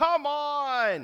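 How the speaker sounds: exasperated shriek, very loud and high, "on" drawn out. Describing watching fake scenarios on tv programs, retelling yelling at the tv. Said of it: "And I'm just yelling".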